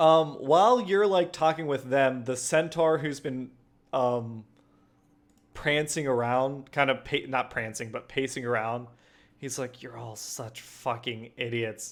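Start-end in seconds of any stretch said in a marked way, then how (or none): 9.8-11.9 snide muttering under breath, quieter. Voicing a pacing centaur making snide remarks: muttering under his breath. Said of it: "making underhanded comments under his breath".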